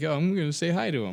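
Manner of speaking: goofy, simple, dopey little voice. Retelling saying hi to a game character: imitating own dopey little way. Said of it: "in a dopey little way".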